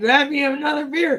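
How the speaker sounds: yelled call, pitched high. Recalling what the speaker kept yelling at their dude, retelling yelling at a friend. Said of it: "going like yelling at my dude".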